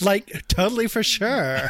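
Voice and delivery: put-on slow, drawn-out Valley Girl voice. Joking about an action hero talking like a Valley Girl: put-on Valley Girl voice. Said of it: "I'm imagining John McClane as a Valley Girl".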